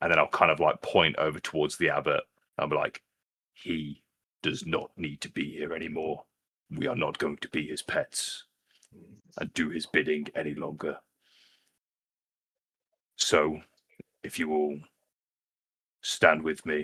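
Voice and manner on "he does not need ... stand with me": hushed, quiet speech, getting quieter. Urging the others in character to stand together: hushed tone. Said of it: "I'm kind of speaking in a hushed tone".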